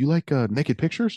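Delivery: slight put-on Pakistani accent. Retelling what a coworker asked: imitating a Pakistani accent. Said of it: "he's got a bit of an accent".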